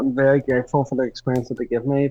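ordinary talk, nothing marked

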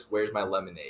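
acted, mock freaking-out voice. Retelling what he said on the highway back to campus, mock freaking out. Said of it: "he starts freaking out over it".

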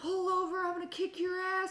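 very high, shrill screaming. Retelling two drivers screaming at each other from the car, imitating someone screaming. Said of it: "They were screaming like".

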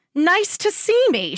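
scornful, very high, slow scoff. She throws Sam's words back at him, scoffing. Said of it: "she scoffed".

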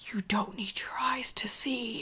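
acted whispery, creepy voice. Retelling a movie scene, a voice in the background: imitating a whispery creepy voice. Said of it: "a whispery, creepy voice that says".

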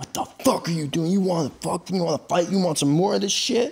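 put-on angry, confrontational, high-pitched aggressive yell. Retelling how a group of guys stopped them and yelled at them, imitating someone yelling. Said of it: "they start yelling at us".

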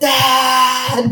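high-pitched shouting.

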